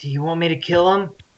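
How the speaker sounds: high, little, half-whispered voice. Half-whispering back to another player during a role-play scene. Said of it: "I want to whisper back".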